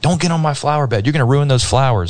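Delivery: mock irate man screaming, high and shrill. Speaker acts out a man yelling at his wife over a flower bed: imitating a man screaming. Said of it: "started like screaming at her".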